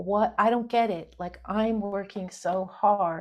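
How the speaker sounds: mock crying voice. Retelling crying on the beach after many rejections: retelling own past crying. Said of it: "I was just on the beach crying".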